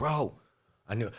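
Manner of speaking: earnest, heartfelt, feeling-heavy emotional outburst. Retelling a brother's words about the Pentagon, imitating brother getting emotional. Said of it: "so he gets real fucking emotional about it".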